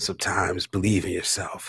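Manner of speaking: put-on deep husky voice. Asked to do it again, showing the voice: imitating a husky voice. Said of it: "He has this voice".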